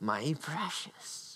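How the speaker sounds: laughing creature impression. Speaker comparing hoarding to Lord of the Rings, doing a laughing Sméagol impression. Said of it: "I'm laughing".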